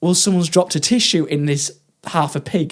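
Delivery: ordinary delivery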